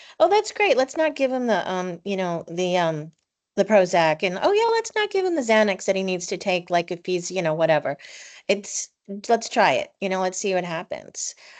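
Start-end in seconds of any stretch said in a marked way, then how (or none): none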